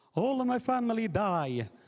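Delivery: put-on very strong, thick Italian accent, very high-pitched. Retelling a uk comedy sketch's exchange student line, in a strong italian accent. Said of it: "speaking with a very strong Italian accent".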